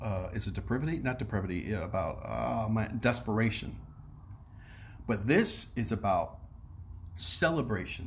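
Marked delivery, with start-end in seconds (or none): none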